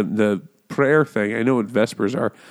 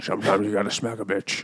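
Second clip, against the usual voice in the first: put-on Scottish accent, lower and quieter; 4 semitones lower, 8 dB quieter than usual. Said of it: "That's exactly how it sounds".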